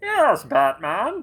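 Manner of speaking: loud, high, booming movie-villain voice. Showing what a movie villain's voice sounds like: Bane voice. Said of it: "the movie The Dark Knight Rises with Bane? And, you know, his voice".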